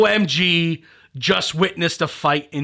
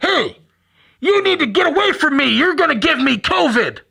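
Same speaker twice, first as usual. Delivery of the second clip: play-acted very high, loud screaming; 10 semitones higher, 5 dB louder than usual. Telling a story about two older men in masks, imitating one screaming at the other. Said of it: "One guy starts screaming at the other guy".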